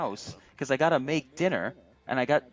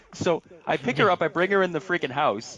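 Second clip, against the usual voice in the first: ordinary talk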